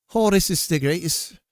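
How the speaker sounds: put-on Irish accent slipping into a Scottish accent. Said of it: "now I'm Scottish".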